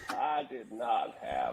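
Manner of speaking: deep drawl, each word dragged. Joking about cigars with the group: Bill Clinton impression. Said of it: "That's a good impersonation".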